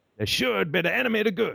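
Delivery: rough, creaky pulpit delivery.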